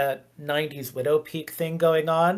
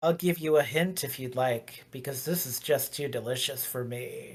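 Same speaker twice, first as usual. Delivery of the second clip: soft-spoken, hushed vampire voice; 3 semitones lower, 6 dB quieter than usual. Narrating a scene at the park with zombies, speaking as the vampire in a vampire character voice. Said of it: "and the vampire goes".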